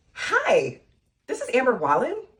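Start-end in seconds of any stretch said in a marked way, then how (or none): 1.3-2.2 pitch rising upward on "Wallen" like a question. Practicing a phone greeting with a name, rising on 'wallen' like a question. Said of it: "you have to say it like a question".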